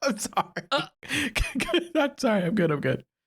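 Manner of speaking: laughing while talking. Apologizing to another speaker for laughing, laughing while talking.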